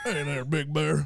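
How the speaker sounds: radio-filtered CB voice. Answering a request to talk like over a CB radio: put-on CB radio talk. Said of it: "like you're talking over a C B radio".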